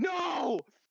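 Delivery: screaming, pitched high.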